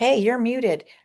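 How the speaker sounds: high, app-alert-like called-out voice. Retelling what the muted program yells: imitating software yelling. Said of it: "it yells at me".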